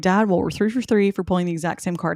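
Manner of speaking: ordinary talk, nothing marked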